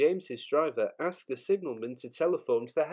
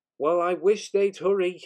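loud, pitched-up, grousing grumble; 5 semitones higher, 7 dB louder than usual. A frozen fireman, waiting for the luggage van to be loaded, complains, grumbling. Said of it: "grumbled the fireman".

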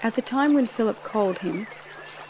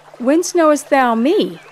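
startled, very loud surprised outcry; 4 semitones higher, 11 dB louder than usual. Nathanael answers Jesus, who has just spoken of him, exclaiming in surprise. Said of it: "In surprise, Nathanael exclaimed".

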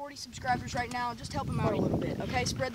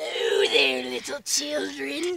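put-on evil clown voice, louder; 7 dB louder than usual. Acting in a skit as Pennywise, calling to children: Pennywise voice. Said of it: "it's not like Pennywise is just gonna appear".

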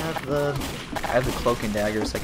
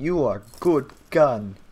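terrible, slow, put-on Russian accent; 3 semitones higher, 4 dB louder than usual. Bantering with others, terrible put-on russian accent. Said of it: "That was a terrible Russian accent".

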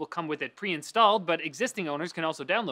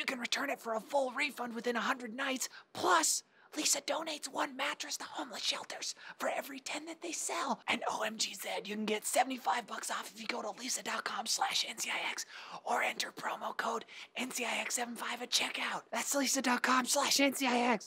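hushed, whispered delivery; 6 semitones higher, 8 dB quieter than usual. Reading a sponsor message at the end of Netlink Daily, whispering. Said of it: "I'll stop whispering now".

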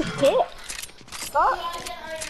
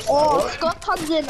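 normal talking voice

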